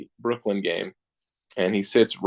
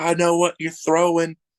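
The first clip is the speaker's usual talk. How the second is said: put-on yelling, higher pitch; 8 semitones higher than usual. Retelling how a fan behind home plate heckles the pitcher: imitating a fan yelling. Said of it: "he's just yelling at you the whole time".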